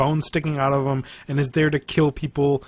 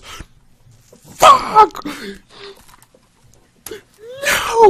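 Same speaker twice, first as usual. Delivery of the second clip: shrill, very high, very loud cry of pain; 8 dB louder than usual. Retelling a Superman fan's reaction to Doomsday, imitating him screaming. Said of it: "And he just starts screaming".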